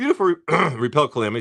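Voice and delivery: voice breaks on syllable "re-". Reading out a list of card products, voice cracking. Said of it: "my voice cracked there".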